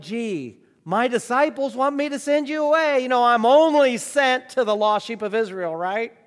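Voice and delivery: light, slightly mocking sarcastic tone. Acting out a reply to a woman about disciples, in a mock-sarcastic tone. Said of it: "Jesus could have used a little sarcasm in the tone of his voice".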